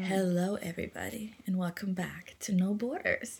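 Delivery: seductive tone. Retrying the show's welcome with a sensual beginning, in a sensual voice. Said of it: "Let me try again".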